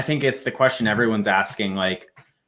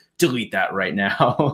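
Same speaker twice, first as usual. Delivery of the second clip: put-on, super pissed-off, furious child's voice. Retelling a kid's reaction to a joke video posted by Lambro, imitating him pissed off. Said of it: "the other kid gets like super pissed off".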